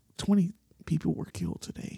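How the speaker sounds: near-whispered, smooth, calm, breathy radio voice. Joking with friends about relaxing car radio, in an NPR radio voice impression. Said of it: "they'll be like".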